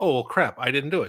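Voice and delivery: ordinary talk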